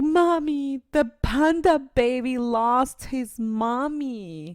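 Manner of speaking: put-on very slow sobbing child, high, drawn out. Retelling what the crying child said about the movie: imitating Krista crying. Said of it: "she just kept crying and crying".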